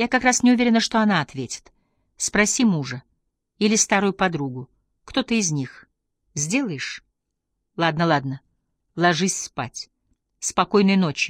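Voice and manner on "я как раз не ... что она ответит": plain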